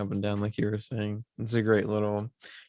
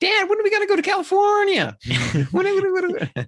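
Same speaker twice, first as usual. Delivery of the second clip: put-on hyper little kid yelling, very high and loud; 9 dB louder than usual. Retelling a film scene where the son asks his dad: imitating a yelling kid. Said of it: "He's yelling".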